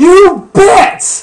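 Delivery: shrill, booming, very loud, high-pitched all-out yell. Retelling an anime scene, answering a world government official, as Luffy's loud shout. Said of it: "says Luffy in a really loud voice".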